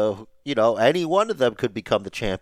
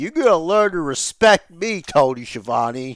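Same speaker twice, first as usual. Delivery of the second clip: mock drunk angry slurring voice, higher and louder; 6 semitones higher, 4 dB louder than usual. Imitating a wrestler's promo that sounded drunk: imitating a drunk slurring rant. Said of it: "Drunk and angry".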